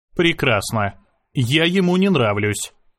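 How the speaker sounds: ordinary delivery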